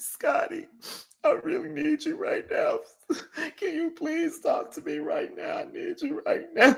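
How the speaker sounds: play-acted, very high, tearful crying plea. Retelling a Christmas Eve phone call where the caller pleads: imitating someone crying. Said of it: "Are you crying?".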